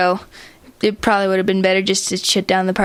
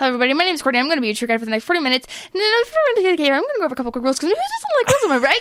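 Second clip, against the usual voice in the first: talking twice as fast, rushed and much higher; 6 semitones higher than usual. Asked for an example, giving a cave tour at twice the speed. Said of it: "a cave tour that goes twice the speed".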